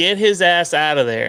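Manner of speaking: put-on American accent. After asking to use an american accent for a minute: put-on american accent. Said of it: "Can I use my American accent for a minute?".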